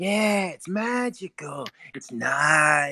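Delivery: very slow, stretched, lingering, drawn-out delivery. Describing a favourite stand-up comedian's way of talking: imitating a comedian's voice. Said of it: "he has that kinda this voice, and he's like".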